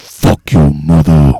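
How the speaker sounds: fake seductive low voice. Retaliating into the mic at another speaker: put-on sexy deep voice. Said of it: "he has a sexy, deep voice".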